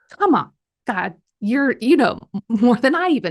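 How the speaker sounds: sassy, talking-back tone. Answering a calm voice that asked why she's angry, act out her sassy reply. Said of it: "I was really that sassy".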